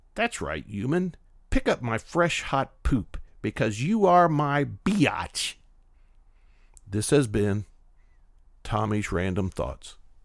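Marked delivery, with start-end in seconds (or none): 0.2-5.6 smug, superior, self-satisfied dog voice. Speaker voicing a dog watching its owner do a degrading duty, smug dog voice. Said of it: "The dog smugly watches you performing this degrading duty and says".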